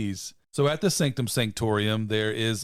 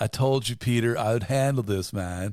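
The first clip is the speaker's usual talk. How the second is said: put-on dude-speak voice. Retelling a movie scene in a character's words: Bill and Ted voice. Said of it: "You sound like Bill and Ted".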